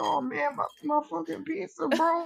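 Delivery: mock drunken slurred speech. Retelling a drunk customer's complaint about his ruined pizza: imitating a drunk man slurring. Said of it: "slurring 'cause he's clearly very drunk".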